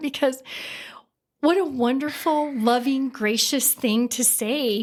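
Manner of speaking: choked-up, emotional delivery, breaking mid-sentence. Recalling being hugged and warmly welcomed for the first time, choked up. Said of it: "I get choked up every time I think about that".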